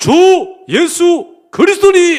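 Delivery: very high, slow, loud, full-voiced call from the belly.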